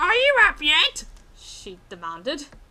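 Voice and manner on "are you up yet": put-on high Australian voice, very loud, booming. Reading a story aloud, voicing the aunt at the door: high-pitched Australian voice. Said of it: "I'm trying to do the high-pitched Australian voice".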